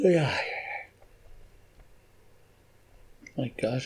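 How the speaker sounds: talking through a yawn. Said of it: "I'm yawning like mad".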